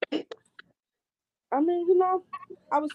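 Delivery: speaking through chewed food. In a conversation, speaking while eating. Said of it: "Are you eating right now?".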